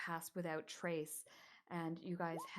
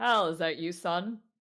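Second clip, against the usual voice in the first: very loud, booming fatherly voice; 16 dB louder than usual. Narrating a story, voicing the father calling out to his son, big booming voice. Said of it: "you hear a big booming voice coming from that painting room".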